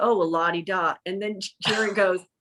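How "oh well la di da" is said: jokey, mock playful tone. Retell an interviewer's reply to his guest's remark about his office, imitating someone joking. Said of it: "David jokingly goes".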